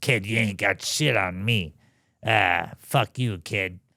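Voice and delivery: put-on rasping, rough-edged Boston accent. Remembering the man who called him Kid, the speaker quotes him in George's raspy Boston voice. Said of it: "He had a raspy Boston voice".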